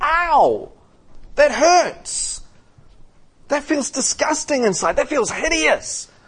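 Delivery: high, pained ow, audibly hurt.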